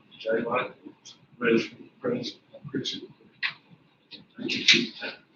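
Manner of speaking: soft, quiet, soft-spoken voice. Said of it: "Jay talked pretty, pretty soft".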